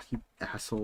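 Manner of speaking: muttered under breath. Retelling insulting the staffer: imitating a mutter under breath. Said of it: "I muttered under my breath".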